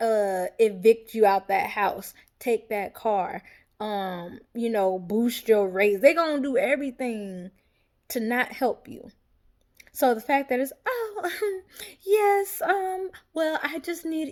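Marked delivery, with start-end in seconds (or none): 10.8-14.3 very high, slow, sugary fake-sweet voice. Retelling how the mother talked to debt collectors: imitating mother's fake polite voice. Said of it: "she put on this little fake ass voice".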